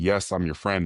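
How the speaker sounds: ordinary talk, nothing marked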